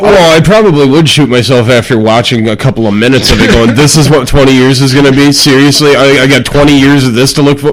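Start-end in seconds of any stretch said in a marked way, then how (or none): none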